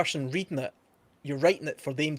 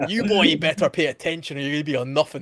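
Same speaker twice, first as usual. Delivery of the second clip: loud, stern schoolmaster scolding voice; 7 dB louder than usual. Retelling how a geography teacher poked students in the chest: imitating a scolding teacher. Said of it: "he would point his finger right in your chest and say".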